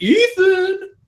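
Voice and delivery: very high, loud, sing-songy taunting call.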